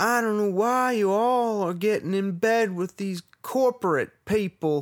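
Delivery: very high, loud, put-on Southern gentleman accent. In an improvised Whole Foods scene, the speaker voices a Southern gentleman shopper. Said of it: "accent just changed again".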